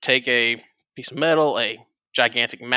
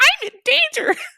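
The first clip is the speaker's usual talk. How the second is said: put-on very high, loud little-kid voice; 6 dB louder than usual. Quoting a cartoon kid at the back of a bus: Ralph Wiggum impression. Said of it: "it's the little kid".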